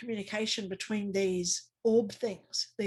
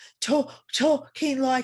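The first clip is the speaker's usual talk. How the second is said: mock breathless talking, higher and louder; 4 semitones higher, 6 dB louder than usual. Imitating someone talking on the phone during CPR: imitating someone short of breath. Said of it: "He was very short of breath".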